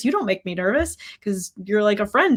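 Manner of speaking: ordinary talk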